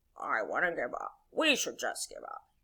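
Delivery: very low, deep, croaky voice. Telling the kite story as Toad returns from the mocking birds, croaky Toad voice. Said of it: "when I do the croaky toad voice".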